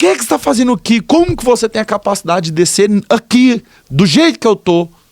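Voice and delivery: very high, loud, tearful sobbing shout. Retelling feeling god's presence in the room: retelling own crying shout. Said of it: "eu comecei a chorar, só que eu comecei a gritar".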